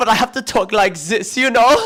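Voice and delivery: put-on jokey parody German accent. Explaining they can't do a British accent, showing their fake German accent. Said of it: "I could do my fake German accent".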